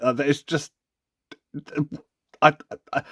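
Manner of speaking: stumbling over words. Recalling opening a toy thirty-odd years later, tripping over words. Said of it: "I'm now tripping over my words".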